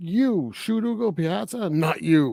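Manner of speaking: drawn-out, high but contained screaming voice. Speaker retells what a man screamed; retelling a man screaming. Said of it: "he is screaming".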